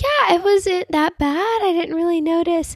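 reassuring voice, pitched way up and stretched.

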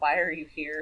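mock snippy delivery. Retelling a character's line from a quarrel: imitating a snippy question. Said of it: "get a little snippy with each other".

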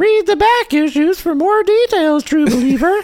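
put-on joking witch character voice. Host on the show, stuck in a joke character voice: witch voice. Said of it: "I'm stuck in witch voice".

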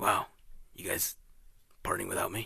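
breathy, whispered put-on character voice. Retelling a movie scene, doing Batman: Will Arnett as Batman voice. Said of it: "That's my best Will Arnett playing Batman".

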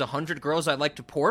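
normal talking voice

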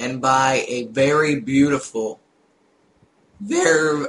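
voice breaks mid-phrase. Planning to save up for a new pc, speaker's voice cracks. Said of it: "voice crack".

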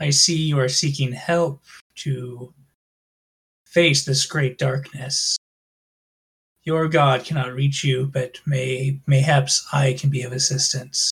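inner-voice tone. Narrating a game, voicing a new voice the player hears: a voice in your head. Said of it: "You hear a voice in your head go".

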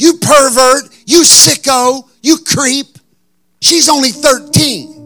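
mock yelling, woman's voice. Telling a story, the speaker acts out a woman yelling at a man. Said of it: "I heard this woman go".

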